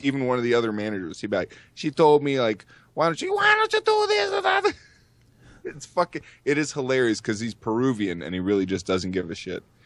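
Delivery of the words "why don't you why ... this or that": terrible, very high woman's voice. Retelling how he quotes another manager: imitating a woman's voice. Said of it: "every time he does like a woman's voice".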